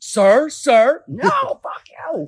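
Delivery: very high, very loud, drawn-out furious scream. Retelling a fight with a shop owner: retelling screaming at him. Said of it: "I was screaming at him".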